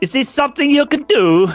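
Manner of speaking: put-on Kazakh accent. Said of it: "'cause of your accent".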